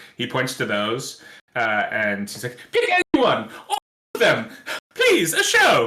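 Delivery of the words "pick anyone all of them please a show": squeaky, very high-pitched, loud, swooping voice. Retelling how a man pointing at a pile of scripts spoke, in a very high-pitched voice. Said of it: "with his like very high pitched voice".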